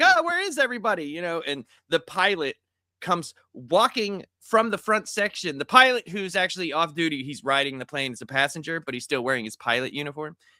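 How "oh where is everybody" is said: put-on very high small little-girl voice. Retelling a movie scene, imitating the blind girl in the movie. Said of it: "the blind girl, like, is like".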